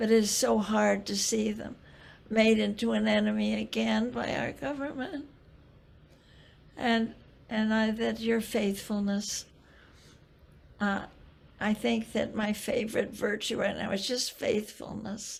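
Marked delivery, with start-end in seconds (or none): 0.0-5.3 tearful voice, close to crying. Speaking to their darling one, about to cry. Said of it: "now I'm going to cry".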